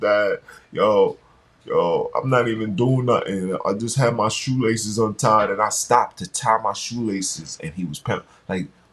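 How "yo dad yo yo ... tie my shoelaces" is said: put-on upset child voice, tearful and crying. Retelling a son's daily phone calls from school: imitating son crying. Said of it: "My son over here crying".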